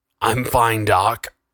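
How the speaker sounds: gurgled, gurgling words. Narrator reads the initiate's reply to a comrade offering his hand, gurgling. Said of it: "the initiate gurgled".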